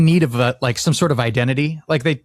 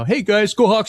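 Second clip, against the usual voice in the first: outgoing, vocal cheering voice, pitch lifted; 5 semitones higher than usual. Imitating the team's former quarterback cheering: imitating Russell Wilson. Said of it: "even Russell Wilson was very, like, vocal".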